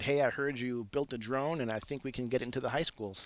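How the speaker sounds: ordinary delivery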